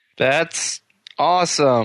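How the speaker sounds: sarcasm posing as enthusiastic, feigned excitement. Told about this weekend's curling championships, replying sarcastically. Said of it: "you seem so excited".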